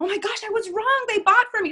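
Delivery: very high, loud, thrilled, gushing excitement. Showing how a client could tell the coach they were wrong: imitating an excited client. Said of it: "tell me you were wrong with excitement".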